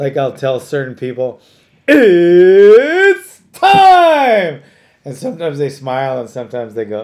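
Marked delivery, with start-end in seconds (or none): 1.9-4.6 very loud, high announcer call, stretched-out "it's". Retelling telling people before doing things: Bruce Buffer impression. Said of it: "I practice that a lot".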